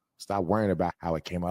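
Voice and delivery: ordinary talk, nothing marked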